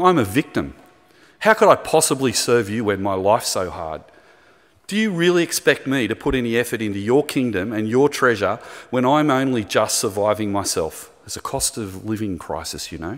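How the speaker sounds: normal talking voice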